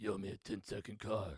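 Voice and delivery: low, soft grumble under the breath. Telling others what Vin Diesel is always saying in the first movie, as a spot-on Vin Diesel impression. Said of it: "that was a really spot on impression".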